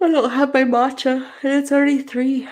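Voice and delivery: very high, stretched words dragged through a yawn. Answering viewer questions, the speaker talks while yawning. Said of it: "That's why I'm yawning".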